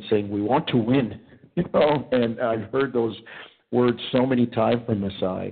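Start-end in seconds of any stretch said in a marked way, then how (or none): 0.3-1.2 put-on Nigerian accent. Speaking to Chris, quoting what Masai has always said, Masai impression with Nigerian accent. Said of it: "with his African accent".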